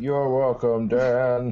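announcer-style voice. After reading a synopsis and thanking IMDb, answering Dan back in an IMDb voice. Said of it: "That's my IMDb voice".

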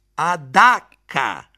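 loud, triumphant, proclaiming voice. A father answers the grandmother's pleading question, announcing triumphantly. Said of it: "annunciò mio padre con aria di trionfo".

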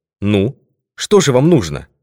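ordinary delivery

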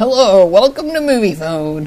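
put-on recorded telephone voice. Showing a caller the voice he sounds like: Moviefone guy voice. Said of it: "You sound like the Movie Phone guy".

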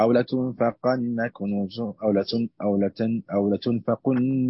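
plain

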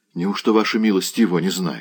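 ordinary delivery

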